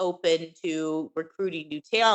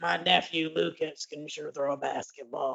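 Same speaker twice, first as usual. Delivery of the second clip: raspy, quieter put-on man's voice; 5 dB quieter than usual. Talking about Keith to everybody, quoting his line in a raspy Keith impression. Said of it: "I love Keith's voice. It's this very raspy".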